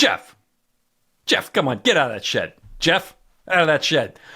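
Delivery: exasperated, annoyed calling voice. Imitating calling a dog away from a smell: imitating calling a distracted dog. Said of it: "like you would have when your dog gets too focused".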